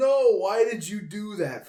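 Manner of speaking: high, loud, slow yell. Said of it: "Tyann yelling at me".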